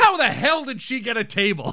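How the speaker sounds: exasperated, fuming, furious and heated outburst. Recapping an episode where Roz gets a table, retelling Frasier's loud furious outburst. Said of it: "Frazier loudly goes".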